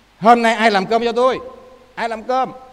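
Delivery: loud, angry outburst.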